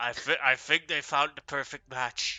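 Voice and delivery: put-on villainous whisper. Picturing Strahd whispering to Iris: imitating Strahd whispering. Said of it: "whispering in, in Iris".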